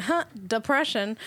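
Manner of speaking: usual speaking voice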